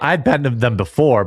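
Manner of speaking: voice cracking and breaking. Telling a story about a strip club, voice cracking. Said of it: "But voice crack".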